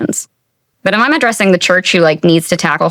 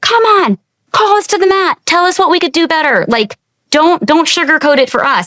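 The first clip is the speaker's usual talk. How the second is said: very high-pitched, fired-up, passionate crowd shouting; 9 semitones higher than usual. Retelling how pastors stood up at the stage: imitating people yelling. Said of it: "they're yelling at the stage".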